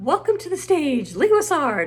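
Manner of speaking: loud, high announcer-style stage host voice.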